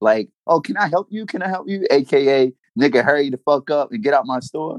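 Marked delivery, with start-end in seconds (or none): 0.5-1.9 mock nervous flustered tone, higher. Retelling how store workers act when he walks in: imitating flustered store workers. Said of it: "They start asking you".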